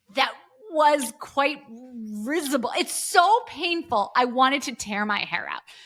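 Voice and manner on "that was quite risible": put-on stammering repeat, higher. Retelling a nervous caller repeating an odd word: imitating a stuttering repeat. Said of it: "he stutteringly repeats".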